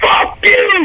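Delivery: high, mocking yell.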